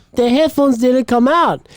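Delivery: bad put-on Indian accent. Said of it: "my Indian accent is horrible".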